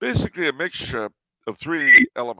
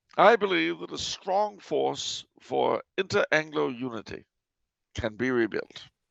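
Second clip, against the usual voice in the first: put-on mid-Atlantic accent, transatlantic blend; 2 semitones higher, 3 dB quieter than usual. Giving a speech about bringing back the mid-Atlantic accent: mid-Atlantic accent. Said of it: "I'm just not placing that accent".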